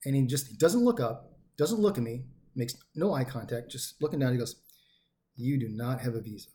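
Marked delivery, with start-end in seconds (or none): 5.4-6.5 put-on slow, quiet, calm, hushed voice. Retelling what the man holding the speaker's documents said, imitating a slow, quiet, calm voice. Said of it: "like real slow, real quiet, real calm".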